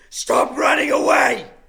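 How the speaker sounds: loud, full-throated, all-out top-of-the-lungs scream. Acting out a character's intimidation attempt: screaming at the top of lungs. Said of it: "I scream at the t-, top of my lungs".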